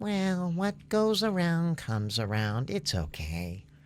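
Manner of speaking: mock gentle, calm, sweet little old lady voice. Retelling what a senior citizen said to the man who disrespected her: imitating a sweet tone. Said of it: "she sweetly said".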